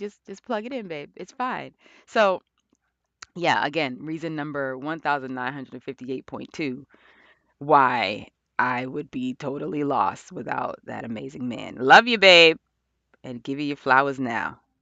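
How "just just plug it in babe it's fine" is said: very nice, soft, calm, kind, easygoing. Retelling what that man said when the trackpad died: imitating a nice, calm tone. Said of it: "Very nicely and very calmly".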